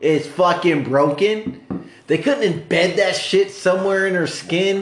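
fed-up, angry, high-pitched outburst. Speaking to podcast listeners during a heated discussion, mad. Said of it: "why you're so mad about it".

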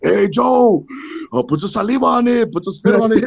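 play-acted, high-pitched yelling like everyone at once. Retelling how everyone would yell advice at joe, imitating them yelling. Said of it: "everyone be yelling".

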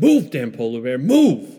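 loud shouting, urging. Voicing an unseen figure driving a sled forward: yelling. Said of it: "somebody yelling".

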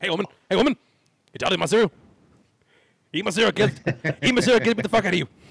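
loud, high-pitched, pushy TV ad shouting. Imitating Mister T selling his cereal like in Rocky Three: imitating Mister T selling cereal. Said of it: "He's like".

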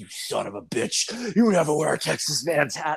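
acted enraged, unhinged berserk rage, pitch climbing. Retelling a wrestling bit where a guy puts on a hat, retelling Terry going berserk. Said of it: "he's just gone berserk".

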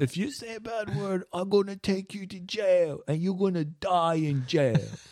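put-on high, soft little-kid voice. A parent quoting their son's threat about saying bad words, son's voice like Jackie Chan. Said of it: "Why are you doing my son's voice like fucking Jackie Chan".

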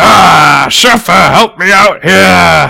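loud, raw, rough bellowing roar. Game master voicing a character who roars to a companion, roaring. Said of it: "And he roars".

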